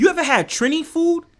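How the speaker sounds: very high-pitched, excited yell. Urging listeners to go try a Trinidadian food spot, yelling. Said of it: "I'm sorry to yell".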